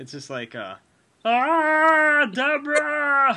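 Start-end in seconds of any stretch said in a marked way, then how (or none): 1.2-3.4 very high, loud, drawn-out Ah. Trying a famous impersonation after being asked: Ray Romano impression. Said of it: "I call it Ray Romano".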